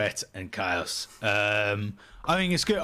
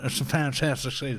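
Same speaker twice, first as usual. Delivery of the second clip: deliberately bad, overblown put-on accent. Doing a bad Donald Trump impression about a great season. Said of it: "I can't do a Trump accent for shit".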